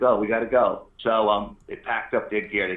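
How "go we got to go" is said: ordinary talk, nothing marked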